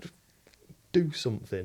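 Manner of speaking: ordinary talk, nothing marked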